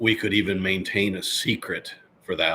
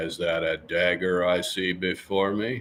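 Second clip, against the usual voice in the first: put-on cowboy drawl. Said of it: "I've done the Duke".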